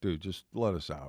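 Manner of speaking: ordinary talk, nothing marked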